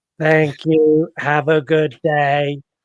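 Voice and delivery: flat, very slow, mechanical robot voice. Mocking the movie's robot voices, in a robotic self-checkout voice. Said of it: "the voice of the robots is like they're like the world's worst self checkout".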